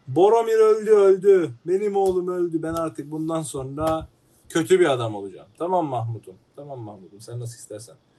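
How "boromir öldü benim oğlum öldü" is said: put-on crying, much higher, louder, slower. Reenacting Denethor's scene for a listener, mock-crying as Denethor. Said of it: "Dayıcım ağlama beni de ağlatacaksın".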